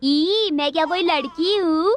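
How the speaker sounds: ordinary delivery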